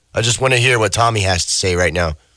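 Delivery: ordinary delivery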